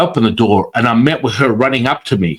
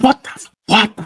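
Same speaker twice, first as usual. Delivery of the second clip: put-on scream, higher; 10 semitones higher than usual. Retelling the reaction heard over the phone: imitating someone screaming. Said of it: "and she starts screaming".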